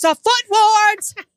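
mock screaming. Retelling a woman yelling to everybody in the store, retelling a woman screaming. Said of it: "She's screaming".

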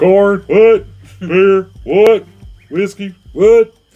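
each what yelled very high, loud and slow. Imitating a Stone Cold impression, listing items and asking what: Stone Cold impression. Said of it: "start doing a Stone Cold impression out of nowhere".

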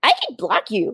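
play-acted, sinister, menacing, evil-sounding villain voice. Quoting what a woman replied, in a mock-evil menacing voice. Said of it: "like an evil voice".

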